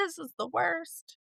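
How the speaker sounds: put-on babyish, high-pitched whiny complaining. Retelling how they complain when sick: imitating own whiny sick self. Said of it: "I'm such a baby when I get sick".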